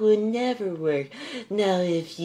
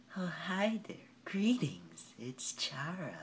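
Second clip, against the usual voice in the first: very soft, hushed voice, barely audible; 2 semitones higher, 17 dB quieter than usual. Trying out character voices, the speaker does a Chara voice. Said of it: "And I do Chara".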